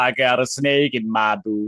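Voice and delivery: slow, deliberate, weighty delivery. Told to say Woody's catchphrases, do a Woody line sounding like Arnold Schwarzenegger. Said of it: "Why do you sound like the Terminator? That sounded like Arnold Schwarzenegger".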